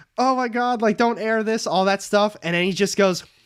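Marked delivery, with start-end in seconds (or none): 0.2-1.7 mock sobbing, high, tearful pleading. Retelling how caught men beg the show not to air it, imitating someone crying. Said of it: "they break down crying and they're like".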